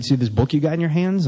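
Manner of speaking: normal talking voice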